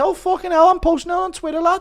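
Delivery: very high, upset, squeaky voice. Speaker does a bit of Darren reacting to a leaked pic: Darren impression, getting leaked. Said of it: "Impression of Darren getting leaked".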